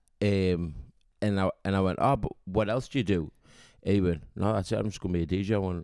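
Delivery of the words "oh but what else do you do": plain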